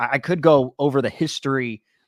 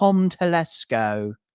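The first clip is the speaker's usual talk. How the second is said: put-on English accent on the name; 4 semitones higher than usual. Saying a name for fun on the podcast: English accent. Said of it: "I'm going to say that with an English accent".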